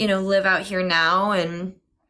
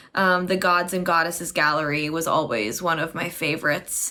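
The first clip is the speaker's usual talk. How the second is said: ordinary talk, nothing marked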